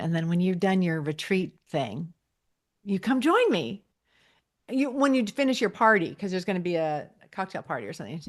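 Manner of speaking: plain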